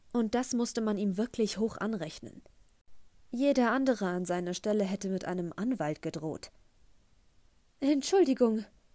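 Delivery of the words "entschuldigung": slightly breathless, much higher, louder. Lottie apologises to a man who asked if everything was all right, a little breathless. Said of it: "sagte Lottie ein wenig atemlos".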